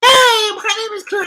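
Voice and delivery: shrill, booming, high and loud voice. Talking about an upcoming fight, doing a Clarissa Shields voice. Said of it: "in a Clarissa voice".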